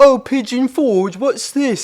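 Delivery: put-on British accent, very high-pitched and loud. Retelling a reel of a Brit reacting to Pigeon Forge: imitating a British accent. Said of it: "a Brit going like".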